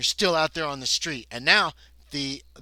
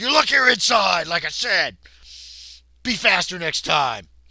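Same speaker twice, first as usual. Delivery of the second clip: glaring, raised, angry sergeant-style voice; 4 semitones higher, 5 dB louder than usual. Voicing a sergeant who glares and points a gun: glaring angry sergeant. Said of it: "he glares at you".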